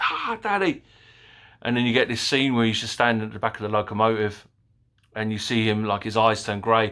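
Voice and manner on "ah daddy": put-on shrill, frantic, very high panicked little-girl scream. Recounting a film scene, the speaker imitates the daughter screaming: imitating a girl screaming. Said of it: "She's screaming like".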